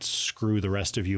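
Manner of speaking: plain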